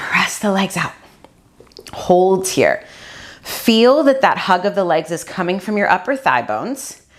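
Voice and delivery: voice trembling and shaking. Guiding an exercise while holding the position herself: shaking voice while holding a pose.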